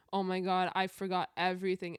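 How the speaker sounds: normal talking voice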